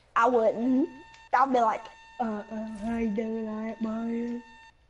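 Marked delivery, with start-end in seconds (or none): 2.2-4.4 very quiet, hushed, slow imitation of another voice. Talking about betting on kills in a game, imitating someone's exact voice. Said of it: "I do the exact voice, too".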